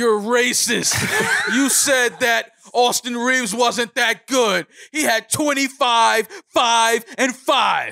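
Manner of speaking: put-on drunk angry rant. Retelling how a drunk friend chewed him out in a bar, imitating him berating. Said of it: "he lets me have it in the fucking bar".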